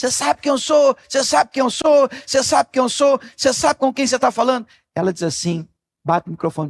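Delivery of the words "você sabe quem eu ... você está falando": mock man hollering, high, insistent, repeated. Retelling a man at a service counter, imitating a man shouting. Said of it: "E ele gritando assim".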